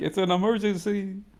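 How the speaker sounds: high-pitched scream. A role-play player answers deputies chasing them on horseback, screaming. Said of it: "and I'm screaming back".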